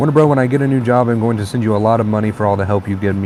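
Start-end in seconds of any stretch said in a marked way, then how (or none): none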